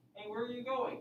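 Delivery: voice lifts at the end on going. Explaining to the class how voices go up in questions: rising question intonation. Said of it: "have your voice go up a little bit at the end".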